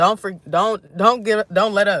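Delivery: stammering, tripping over words, repeated false starts. Speaker addressing listeners directly, apologizing for stumbling, stuttering. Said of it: "I'm sorry I'm stuttering".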